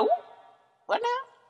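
very high, loud exclamation. Retelling a reply to a text message in a Jasmine Masters voice. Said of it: "In my Jasmine Masters voice".

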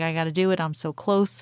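plain

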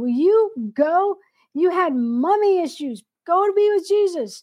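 desperate, high-pitched screamed outburst. Recalling an ugly death, the speaker re-enacts screaming at the dying person: retelling her own screaming. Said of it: "One minute I'm screaming".

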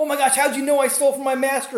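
shrill, very high, loud acted-out outcry. Retelling how a man reacted on hearing a prophecy: imitating someone yelling. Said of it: "And then yell".

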